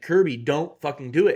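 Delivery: half-scream, partial yell. Retelling what was yelled at the television: imitating own screaming at TV. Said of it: "partially screaming at my television".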